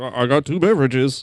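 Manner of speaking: goofy, dopey goofball voice. Asked about his impression, the speaker shows how the actor said it: goofball Adam Scott impression. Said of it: "it's like a little goofball".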